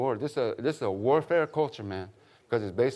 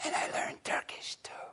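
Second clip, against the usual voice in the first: hushed, secretive, confiding whisper, barely voiced. Acting out a man who suddenly started whispering to him, retelling a whisper. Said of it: "And then he started whispering".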